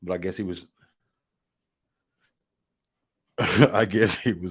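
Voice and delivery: words broken up by laughing. Commenting after the other speaker cut out: laughing while talking. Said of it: "I'm laughing at my text".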